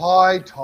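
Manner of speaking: tired mock greeting tone. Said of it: "Why do you sound tired already?".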